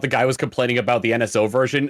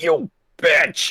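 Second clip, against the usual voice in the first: strained, drawn-out dying wail; 4 semitones higher than usual. Describing guards being killed in a video game, imitating a Perfect Dark guard's strained death wail. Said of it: "in a strained voice going".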